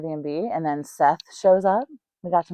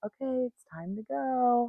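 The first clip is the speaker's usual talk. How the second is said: hushed, very quiet, soft, gentle and slow; 7 semitones higher, 12 dB quieter than usual. Retelling a friend calling to wake someone up: imitating a gentle wake-up call. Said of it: "All gentle, like".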